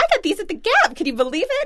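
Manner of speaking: high, loud, amazed, gushing voice.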